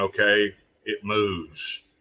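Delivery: put-on snarky sarcastic comeback. Retelling own video reply about sliding a cigar band: retelling own sarcastic remark. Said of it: "that's just me being sarcastic".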